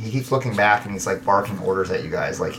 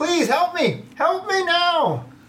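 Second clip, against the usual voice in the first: very high, slow, drawn-out pleading. Voicing a naked man trapped under a tree, calling out: trapped young man's voice. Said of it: "there is a naked young man caught underneath the trunk of it".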